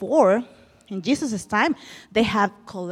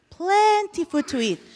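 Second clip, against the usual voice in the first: plenty lifted high and stressed.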